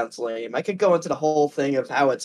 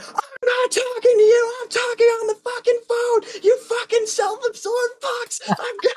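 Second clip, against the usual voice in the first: mock, very high, exploding, furious yelling. Retelling a lady on the phone exploding at the speaker and a friend, imitating a woman yelling. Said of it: "She just she just starts yelling".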